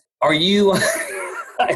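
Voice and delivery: laughing question tone. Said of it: "I can't even say it without laughing".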